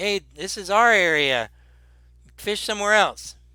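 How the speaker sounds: calling out loudly, pitched high. Describing two men telling an approaching fisher to go elsewhere, calling out. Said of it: "They call out to you".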